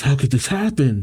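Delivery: ordinary delivery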